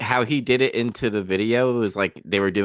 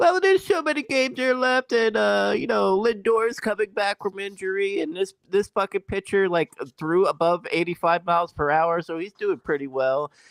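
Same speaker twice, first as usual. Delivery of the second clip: put-on gushing, overly positive, very high, chirpy upbeat voice; 11 semitones higher than usual. Retelling what people on a stream said: imitating overly positive fans. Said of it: "they were being too positive".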